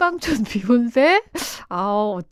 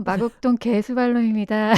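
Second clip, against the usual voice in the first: silky, smooth, gentle and even diction. Saying one's own nickname to show the diction, soft, smooth voice. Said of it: "이렇게 부드럽게 얘기하니까".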